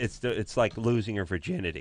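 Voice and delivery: voice cracking and breaking. Recalling a first open mic with a co-host, voice cracking. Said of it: "My voice cracked even saying it".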